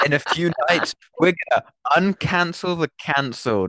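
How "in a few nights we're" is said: usual speaking voice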